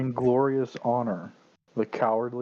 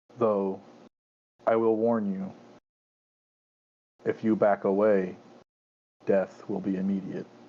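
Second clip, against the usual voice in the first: voice of a dragon creature; 3 semitones lower than usual. Voicing a creature that warns a listener, in a booming draconic voice. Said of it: "this fucking booming draconic voice".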